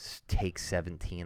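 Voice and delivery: low, soft, grumbling demon voice.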